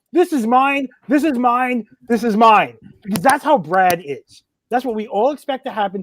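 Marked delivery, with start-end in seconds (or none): 0.1-2.7 mock, high, held-back, mild half-yell. Predicting the award presenter grabbing the microphone on stage, imitating Brad yelling. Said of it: "and start yelling".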